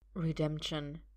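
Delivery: soft-spoken. A character echoes the word the other just said, softly. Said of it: "Arthur says softly".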